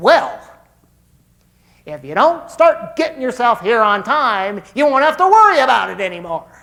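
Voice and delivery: very loud, sarcastic and nasty. Acting out a boss who slams the office door, mock sarcastic and nasty. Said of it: "something really sarcastic and nasty like this".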